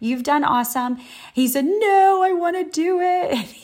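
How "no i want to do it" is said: very high, slow crying through tears. Retelling what a boy with hurting hands said, imitating a boy crying. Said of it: "He's crying through tears".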